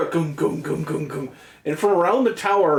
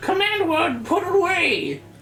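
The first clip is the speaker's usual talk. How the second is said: put-on old wizened wizard voice, higher; 12 semitones higher than usual. Voicing an old wizard who orders the robot back to the tower: old wizened wizard voice. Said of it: "He said".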